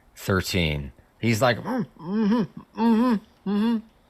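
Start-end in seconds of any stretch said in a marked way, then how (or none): 1.6-3.8 high, muffled mm-hmm sounds. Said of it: "Seemingly agreeing".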